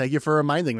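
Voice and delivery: ordinary talk, nothing marked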